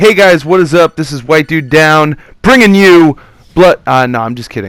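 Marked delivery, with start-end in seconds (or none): 0.0-3.8 loud, fake, put-on tutorial-video hype voice. Speaker opens their video, in a fake hype tutorial-video voice. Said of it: "that uh, fake hype voice".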